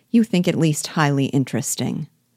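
plain

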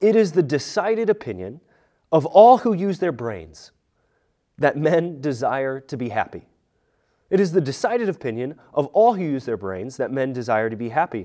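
plain

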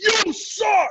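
very high shrieking, screamed outburst. Retelling a dad screaming at a ballgame on TV: imitating someone screaming. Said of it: "my dad just screams".

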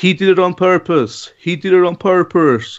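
mock American-style commentator voice. Accusing a commentator over his commentary on a game, imitate Ismail Şenol's American-style accent. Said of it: "me trying to imitate his like American-style accent".

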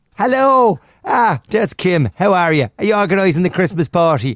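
Irish accent, kept up throughout. Joking that everyone at Aspenwaite Radio has one, greeting Kim in an Irish accent. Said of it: "got an Irish accent".

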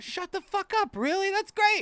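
acted, thrilled outburst at very high pitch. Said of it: "I do it in a, like, excited way".

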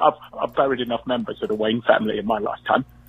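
sad voice sunk low in the throat. Leaving a voicemail as Michael Caine: sad Michael Caine voice. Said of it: "my sad Michael Caine voice".

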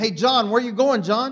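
loud, high calling out. Demonstrating what it means to cry out, the speaker is calling out to John. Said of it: "I'm crying out for John".

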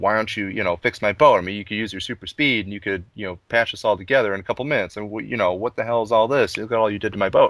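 plain

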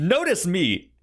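put-on superhero voice. Retelling a scene where the Tick visits Arthur at work: Tick voice. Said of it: "the Tick being like".

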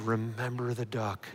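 hushed, soft stage whisper under the breath. Retelling a story where the sister threatens her brother: imitating a half-whisper. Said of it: "And she looks at him and whispers".

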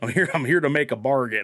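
put-on American accent, every syllable hit too hard. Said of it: "his American accent's so just, like, over enunciated".

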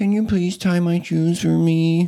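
put-on very high little-kid baby voice. Retelling a child's request to tie her shoes: imitating a child's baby voice. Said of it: "without using your baby voice".

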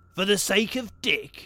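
high, loud, contemptuous, scornful sneer. The dwarf answers the pleading woman, sneering. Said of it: "sneered the dwarf".

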